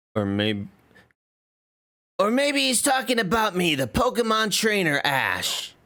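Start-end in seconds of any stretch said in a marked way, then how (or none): 2.2-5.7 anime-style character voice. Riffing on a line, the speaker voices Pokemon trainer Ash, not very well. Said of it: "Sounded like every anime voice I do".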